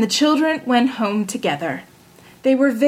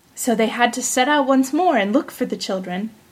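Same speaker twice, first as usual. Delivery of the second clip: ordinary delivery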